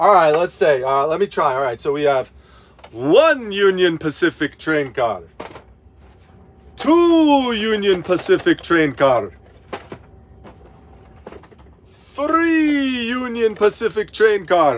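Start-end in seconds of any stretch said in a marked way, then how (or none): 2.9-14.8 pitch swooping and drawn out on each number. Trying the bit again because he wants it more like the Count: the Count voice. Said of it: "He wants me to do it more like the counts".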